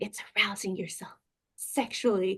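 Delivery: voice dropped low and hushed. Retelling what she told the speaker, repeating her lowered voice. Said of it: "she lowers her voice again".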